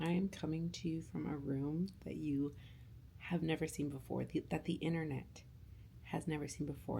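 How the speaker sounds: speaking quietly. Talking quietly while a baby sleeps nearby: speaking quietly. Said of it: "I'm speaking at a quieter level".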